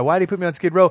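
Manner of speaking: put-on childlike, high pleading. Describing a scene from the film, the speaker acts out Rocky pleading. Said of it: "He's pleading with the guy".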